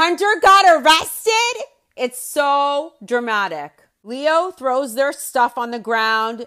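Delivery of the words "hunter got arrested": very high, loud, frantic shriek. Describing someone's dramatic reaction to news, the speaker retells a scream.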